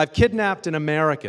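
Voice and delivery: loud, high-pitched scream. Retelling how a man screamed into his cell phone: imitating someone screaming. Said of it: "he screams into his cell phone".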